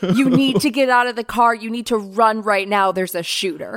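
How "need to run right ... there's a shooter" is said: ordinary talk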